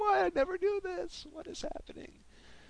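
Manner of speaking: very high, baffled, startled squeal.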